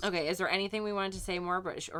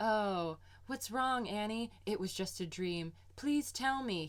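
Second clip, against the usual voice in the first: mock stilted delivery, higher pitch; 3 semitones higher, 4 dB quieter than usual. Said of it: "The dialogue is so stilted".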